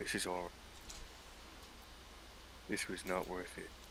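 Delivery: quiet whispered mumble, muttered under breath. Voicing a character regretting a choice in a tense scene: mumbling to himself. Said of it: "mumbles to himself".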